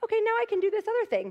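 high, fast, eager voice. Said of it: "And I was like".

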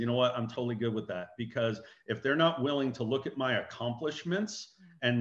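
plain

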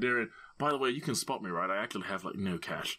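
whispering in character. Whispering in character to Darian, asking him to cover the bet: whispering in character. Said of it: "I kinda whispered".

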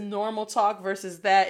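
ordinary talk, nothing marked

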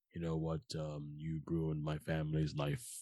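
straightforward, flat, deadpan monotone villain voice. Mocking how villains talk nowadays: flat monotone villain voice. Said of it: "so monotone and so like just straightforward ... They talk like this".

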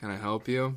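put-on nonchalant, offhand tone. Retelling how a movie hero greets a creature, imitating a nonchalant reply. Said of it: "Nonchalantly goes".

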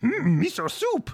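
very high, loud, squeaky little voice. Answering a joke about Jar Jar Binks's favorite meal: Jar Jar Binks voice. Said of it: "good little voice".

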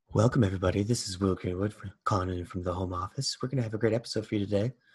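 soft, breathy public-radio host voice, close on mic. Guest joining from the home office welcomes everybody to the episode: NPR impression. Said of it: "This is my NPR little impression here".

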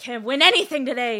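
furious yelling at very loud volume. Narrating a card opponent who just lost and throws down the cards, angry outburst. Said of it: "angrily throws down the cards and is like".

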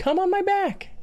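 sugary, adorable, very high cute voice. Retelling what a woman once said: imitating a sweet, cute voice. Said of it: "just the sweetest, cutest voice of all time".

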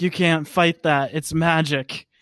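plain

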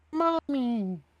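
tiny, shrill, squeaky doll voice, very high. A patchwork doll reaches up to the player's character, squeaky, high-pitched doll voice. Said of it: "You will hear a squeaky, high-pitched voice".

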